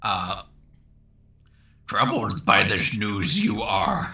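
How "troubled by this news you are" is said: put-on wise old alien voice. Reading an audience request aloud on stream: Yoda voice. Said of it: "I don't know that I even have a Yoda voice".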